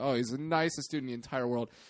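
ordinary delivery

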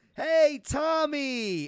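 loud, high, slow calling-out voice. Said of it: "the woman used to call me Tommy".

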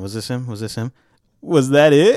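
slow, deliberate delivery, each word drawn out. Doing an impression of a friend named Jose: Jose impression. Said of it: "this is my Jose impression".

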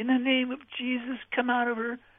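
play-acted shouting, voice pitched way up. Retelling how a crowd of Christians yelled at a tormented woman: imitating people yelling. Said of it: "they were all yelling".

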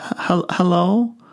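halting, small, high stage whisper. Telling a story, voicing a small child on the phone: whispering small voice. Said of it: "a small voice whispered".

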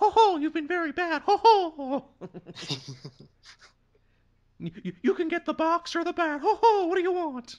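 high squeaky mouse voice. Riffing on Disney going after someone, in a Mickey Mouse voice. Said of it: "good old Mickey voice".

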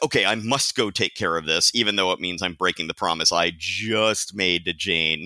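ordinary talk, nothing marked

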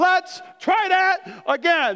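acted irritated, very slow. Retelling a spilled protein shake mess: imitating an upset tone. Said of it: "I didn't say it in a very Christ-like way".

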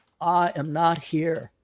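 put-on southern politician voice. Retelling a comedian's joke about lying: Bill Clinton impression. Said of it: "he did a Bill Clinton impersonation".

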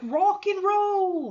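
put-on Cockney accent. Describing a man signing off, retelling him in a put-on Cockney accent. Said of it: "Joey taking on a Cockney accent. He's like".

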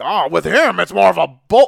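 rough, creaky, rasping, dismissive voice. Retelling what a commentator would say about a wrestler: JBL impression. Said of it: "I don't know why I'm doing that impression".

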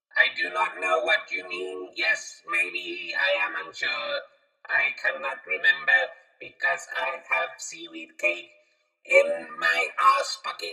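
put-on robotic voice. Asked about computer voices, the speaker answers in a robot voice. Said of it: "robot voice".

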